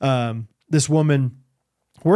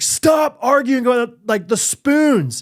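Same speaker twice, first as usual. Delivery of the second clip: raised, drawn-out scolding tone; 8 semitones higher, 3 dB louder than usual. Retelling scolding the kids for arguing over spoons: retelling own raised voice. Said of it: "raised my voice".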